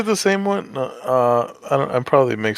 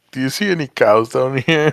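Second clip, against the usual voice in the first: mock grossed-out, appalled, disgusted; 3 dB louder than usual. Retelling a movie scene where onlookers react: imitating disgusted question. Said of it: "looking at him all disgusted".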